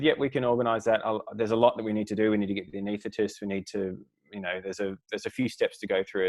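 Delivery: ordinary delivery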